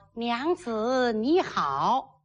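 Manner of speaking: slow, drawn-out, gentle, polite tone. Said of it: "小点声 ... 就得说".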